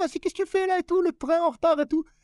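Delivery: petite, very high, put-on street-kid caricature voice. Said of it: "la petite Kaira".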